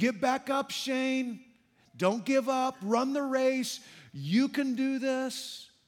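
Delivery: put-on, slow, steady, encouraging cheering tone. Picturing a dad in the stands cheering on: imitating an encouraging shout.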